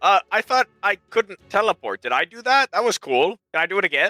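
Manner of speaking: confused stressed high voice. Voicing a character confused after a teleport: Malagus, confused and stressed. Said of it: "He looks at you confused and sort of stressed out".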